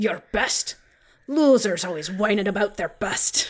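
scornful, sniping, dismissive sneer. Quoting a movie line in a Sean Connery impression. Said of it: "we're doing Sean Connery impressions now".

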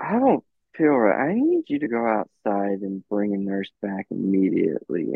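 super slow, deliberate speech, word by word. Retelling what his wife said when she felt unwell, imitating her super slow speech. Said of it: "she's saying it like super slow like that".

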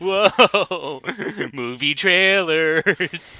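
goofy, exaggerated, high-pitched whoa. After noting someone sounded like Mike Stoklasa, the speaker does Mike Stoklasa's silly whoa voice. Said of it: "silly, like, whoa, voice".

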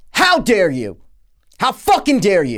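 put-on loud, high raw scream swinging wildly in tone. Retelling pausing a movie and screaming at the television: imitating himself screaming. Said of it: "I screamed at my television".

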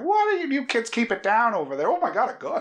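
put-on very high, wild, swooping crazy old man voice. Retelling a movie moment in the hallway: imitating a crazy old man. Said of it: "crazy old man with his cane in the hallway being like".

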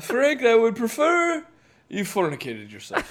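classy, high, swooping put-on British accent. Answering a request to insult someone politely: put-on british accent. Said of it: "can you use a British accent?".

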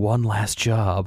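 quiet hushed whisper. Acting out a character pulling a briefcase from her closet: quiet whisper. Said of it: "and quietly whispers".

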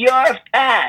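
mock loud, high-pitched yell. Retelling yelling at a girl across the playground: imitating own past yell. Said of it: "I yelled out".

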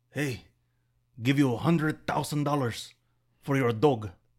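poorly attempted fake Filipino accent. Acting out a man coming up to you in the Philippines, attempted Filipino accent. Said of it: "I tried to do Filipino".

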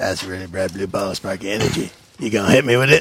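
low, deep hobgoblin monster voice. The game master voices a hobgoblin facing a magic missile: hobgoblin voice. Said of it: "And the hobgoblin says".

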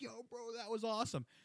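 high, loud, thrilled, hyped-up voice, pitched way up. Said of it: "I'm like".

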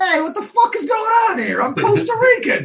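put-on New York accent, very high-pitched. Discussing a movie, the speaker does a line as Joe, in Joe's New York accent. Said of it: "he keeps the same accent".

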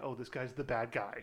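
ordinary talk

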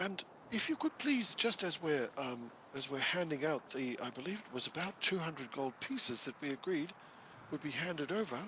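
put-on quiet, softly spoken young man, pitched slightly high. Voicing a young official handing out a reward: softly spoken young man. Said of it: "softly spoken chap".

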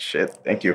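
play-acted, teary, choked-up, overcome voice. Retelling how the actor reacted in the interview: imitating someone tearing up. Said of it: "the kid starts, like, tearing up".

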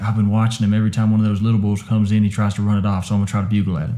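usual speaking voice

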